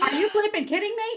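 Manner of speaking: mock, shrill, very high yelling outburst. Retelling yelling at a podcast's host: imitating own yell. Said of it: "I'm yelling at the podcast saying".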